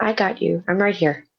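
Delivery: whispering. Player's character grabs an ally's hand after coming through a portal, whispering. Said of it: "gonna grab Rasvina's hand and whisper".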